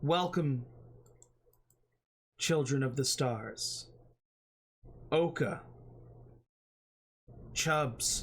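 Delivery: huge, welcoming dragon voice. Narrating a scene, the speaker voices a gargantuan dragon greeting the party: speaking as Missarin the dragon. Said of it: "She nods towards you and says".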